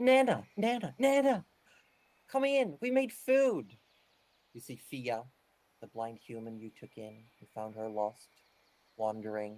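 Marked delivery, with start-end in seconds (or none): 0.0-3.7 very high, slow, drawn-out chorus of shouts. Narrating the scene, the storyteller voices everyone in the room shouting together. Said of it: "And everyone just shouts".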